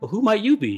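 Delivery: delicate, dainty, very high little voice. Voicing a character who greets a player on stage: dainty voice. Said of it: "a very, uh, dainty vo-, voice says".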